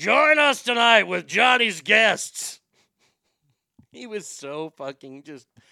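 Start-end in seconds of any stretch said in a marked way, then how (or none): 0.0-2.6 raised, pitched-up, loud TV announcer voice. Doing an impression of a late-night sidekick. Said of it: "I love doing Ed McMahon".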